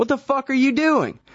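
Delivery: high-pitched angry yell.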